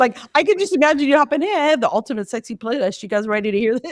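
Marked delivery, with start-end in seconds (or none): none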